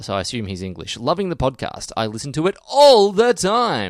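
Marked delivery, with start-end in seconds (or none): 1.0-3.9 loud, slow shouting, rising. Reading out a listener's letter as it was sent: put-on shouting, reading all caps. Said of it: "did he put it in capitals?".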